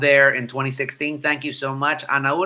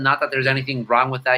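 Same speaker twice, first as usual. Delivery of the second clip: ordinary talk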